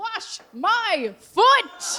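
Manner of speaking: booming, loud, demanding, commanding voice. Voicing a foot that crashes through the ceiling: booming demanding voice. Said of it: "It booms in a demanding voice".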